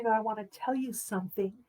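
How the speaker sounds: gentle, very quiet, soft murmured words. Retelling telling a friend over coffee: retelling saying quietly. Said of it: "I said very quietly".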